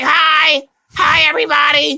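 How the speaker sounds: squeaky little high voice. Retelling how early Smurfette, created by Gargamel, talked: Smurfette voice. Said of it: "she was talk like this and was like".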